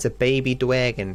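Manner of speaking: put-on Boston accent. Saying it's a baby dwagon, Joey Wheeler Boston accent. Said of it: "I'm trying to do a a Boston accent like uh, Joey Wheeler".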